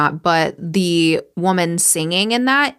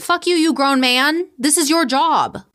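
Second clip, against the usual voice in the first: play-acted very high, shrill, outraged yell; 9 semitones higher than usual. Retelling a yell at the tv about a police statement: retelling a yell at the tv. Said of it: "I literally yelled at the T V".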